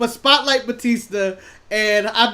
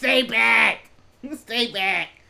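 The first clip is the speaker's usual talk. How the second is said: nasal, sick-sounding voice pushed through the nose. Doing a Seth Rollins impression while sick: Seth Rollins impression. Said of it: "my Seth Rollins impersonation".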